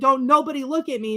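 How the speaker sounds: acted, high, hysterical, falling-apart sobbing. Retelling sobbing at a show after the lights came on: imitating own hysterical crying. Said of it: "because I was hysterical".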